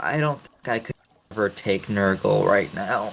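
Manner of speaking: whispering. Whispering in character while going through the sewers: whisper. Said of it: "I just kind of whisper".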